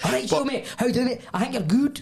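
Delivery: very high-pitched, put-on Scottish accent. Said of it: "Scottish accent".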